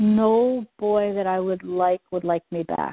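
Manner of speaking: usual speaking voice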